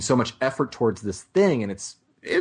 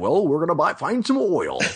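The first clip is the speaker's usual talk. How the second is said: clumsy, bad put-on American accent, pitched up; 7 semitones higher than usual. Speaker imagines an actor talking to them in his film accent; bad Daniel Day-Lewis impression. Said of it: "that's the worst impersonation of a line".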